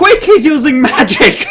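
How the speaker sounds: high-pitched, loud yell full of panic.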